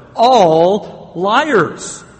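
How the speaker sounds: strong, loud stress on ALL. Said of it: "I want to emphasize that word".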